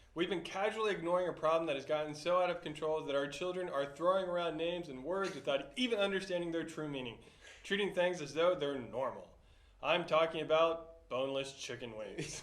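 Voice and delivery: plain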